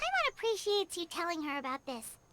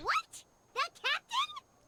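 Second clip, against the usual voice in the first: piercing, very high, startled shout. Reacting with surprise to news about the captain: shouting. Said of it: "Paimon again with the shouting".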